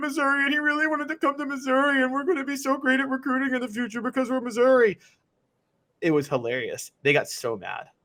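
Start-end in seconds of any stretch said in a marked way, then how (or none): 0.0-5.0 put-on, very high-pitched whining voice. Imitating upset fans who cried about being made fun of: mocking whiny voice. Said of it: "That was a whiny voice".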